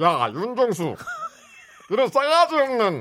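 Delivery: high, swooping put-on celebrity voice. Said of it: "윤문식 플러스 M 목소리".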